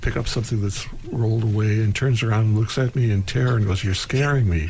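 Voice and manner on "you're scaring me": ordinary talk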